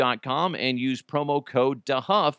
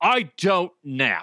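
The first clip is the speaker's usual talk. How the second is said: put-on angry voice, higher; 4 semitones higher than usual. Retelling being told to nap, imitating son: angry son. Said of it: "an actual great impression of him".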